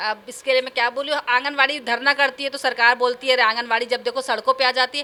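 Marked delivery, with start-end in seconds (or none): none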